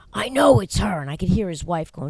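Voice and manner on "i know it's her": loud, shouted, accusing yell. Retelling what a neighbor yelled about the smoking: imitating someone yelling. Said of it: "And he yelled".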